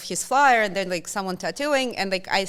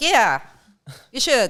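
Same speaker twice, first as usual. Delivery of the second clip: loud, put-on playful, offhand, joking tone; 3 semitones higher, 6 dB louder than usual. Telling a story, the speaker repeats their own reply to a tattoo suggestion, retelling a joking remark.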